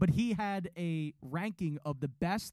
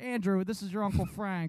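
mock drunken speech; 2 semitones higher than usual. Retelling how an old caller phones the radio show: imitating a drunk caller. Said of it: "he calls them hammered".

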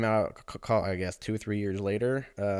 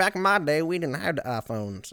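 put-on Southern accent, pitched up; 7 semitones higher than usual. Joking about sounding old and how things were back then: put-on Southern accent. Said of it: "apparently I developed a Southern accent for that one".

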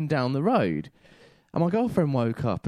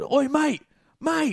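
put-on shout, higher; 13 semitones higher than usual. Retelling how a rider kept trying to shout: imitating someone shouting. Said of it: "trying to shout".

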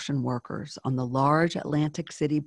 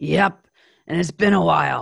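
raspy, gravelly, loud, snappish delivery; 7 dB louder than usual. Reading a story, a woman in a waiting room answers: snapping in a gravelly cigarette voice. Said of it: "And she snapped".

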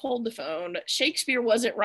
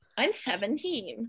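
insistent delivery in a celebrity voice; 5 dB quieter than usual. Retelling a movie scene about a student's age: Drew Barrymore impression. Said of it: "That was a good Drew Barrymore impression".

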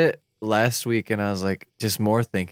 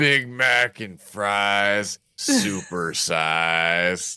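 very slow ghostly voice, size stretched. Acting out a ghost heard in a McDonald's late at night: disembodied voice. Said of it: "that's the disembodied voice".

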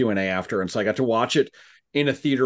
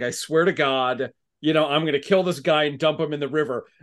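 angry yell, pitched higher; 4 semitones higher than usual. Retelling a movie scene where Jack yells at Eddie: imitating Jack yelling. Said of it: "he starts yelling at Eddie".

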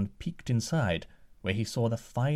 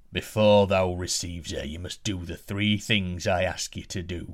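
angry, rumbling giant voice, slower; 4 semitones lower than usual. Narrator reading a tale, the giant answering the prince, angry rumbling giant voice. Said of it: "grew angry at this request and rumbled".

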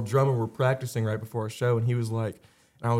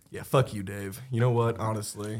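ordinary talk, nothing marked

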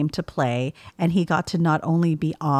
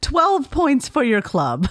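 pitched-up, swooping, sing-song bad Irish announcer voice; 9 semitones higher, 3 dB louder than usual. Reading a line on request: Harry Potter Quidditch announcer voice. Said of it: "your best Harry Potter Quidditch announcer voice".

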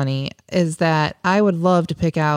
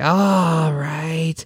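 put-on strained, breathless sound. Imitating a partner answering a request for help: imitating partner sounding constipated, breathless. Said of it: "partly constipated and out of breath".

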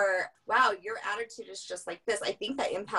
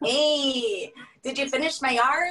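teasing put-on Spanish accent, very slow, high, loud; 5 semitones higher, 6 dB louder than usual. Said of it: "Is that what you sound like?".

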